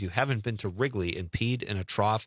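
plain

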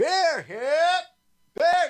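very high vendor cry, "beer" slurred short. Demonstrating a rhythm honed at Milwaukee Brewers baseball games; ballpark beer vendor call. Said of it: "That was honed during several Milwaukee Brewer baseball games".

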